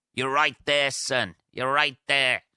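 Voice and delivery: quick, high-pitched, put-on Northern Irish accent. Quoting a line from the film Dead Man's Shoes in a Northern Irish accent. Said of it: "I don't know why I did that in a fucking Northern Irish accent then".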